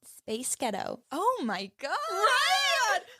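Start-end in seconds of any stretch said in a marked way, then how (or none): 0.2-1.0 put-on American accent. Trying out a joke line after being told how: American accent.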